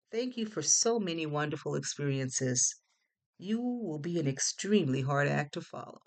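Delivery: ordinary delivery, nothing marked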